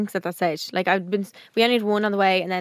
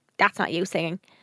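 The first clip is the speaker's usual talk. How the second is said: ordinary talk, nothing marked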